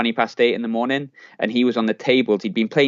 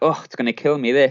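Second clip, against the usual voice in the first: put-on jokey delivery; 3 semitones higher than usual. Contrasting how someone might have said the line: imitating a jokey way of saying it. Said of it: "in a jokey way".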